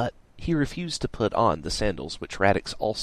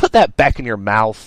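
loud, fed-up, irritated, annoyed yelling; 4 semitones higher, 10 dB louder than usual. Narrator reads Radix, annoyed at a panting teen in front of him, yelling. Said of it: "Radix yelled".

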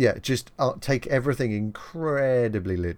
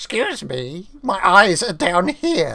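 put-on shrill, loud goblin voice; 7 semitones higher, 7 dB louder than usual. In a tabletop game scene, voicing the goblin sergeant at the top, goblin sergeant voice. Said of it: "Yeah, and then you have the Sergeant Goblin at the top. He's just a dick".

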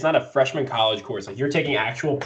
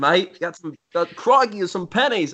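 fake, botched Australian accent, pitched up; 5 semitones higher than usual. Speaker retries an accent after a failed first attempt, bad Australian accent. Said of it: "I can't even do an accent".

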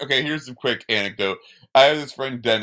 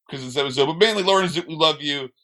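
normal talking voice

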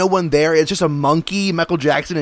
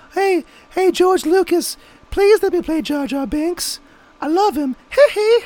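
put-on pop star voice, pleading, pitched higher; 13 semitones higher than usual. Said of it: "He was like".

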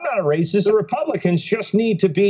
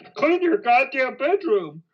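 put-on lecturing pundit voice, higher pitch; 4 semitones higher than usual. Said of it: "It sounds like Jordan Peterson".

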